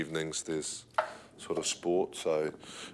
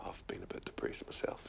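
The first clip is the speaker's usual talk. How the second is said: mock whisper, much quieter. Recalling what people confided to the speaker back then, imitating their whisper.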